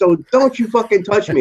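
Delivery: play-acted, very high-pitched angry shout. Retelling Charles getting angry right in the other man's face, retelling Charles's angry shout. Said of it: "right in his face".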